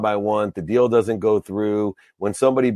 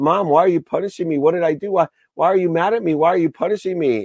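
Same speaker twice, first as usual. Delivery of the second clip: put-on acted, high, tearful crying little kid pleading; 8 semitones higher than usual. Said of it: "And I started to cry".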